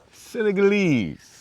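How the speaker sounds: "Senegalese" drawn out, emphatic, slow and high.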